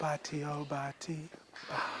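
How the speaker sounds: quiet whisper. Leading a group in the same call, last time: whisper. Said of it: "we're gonna do in a whisper and go quiet".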